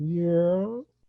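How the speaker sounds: put-on laid-back, relaxed voice. Greeting the other hosts, then doing a Jeff Bridges impression. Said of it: "Jeff Bridges impression from Tron Legacy".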